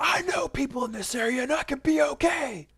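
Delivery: very high, furious, raging outburst. Retelling a woman's outburst when they came to find her, retelling an angry rant. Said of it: "she just pops off in her rage".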